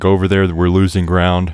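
ordinary delivery

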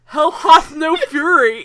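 loud, drawn-out scream through a mouthful of food. Retelling how a character yells with his mouth full: imitating a character screaming, mouth full. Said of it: "he just screams out".

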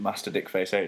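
normal talking voice

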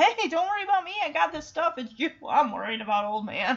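cocky, puffed-up, swaggering bravado, full of itself. Retelling a movie scene, quoting Chance: imitating Chance, puffed-up swagger. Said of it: "it's almost like he's puffing out his chest".

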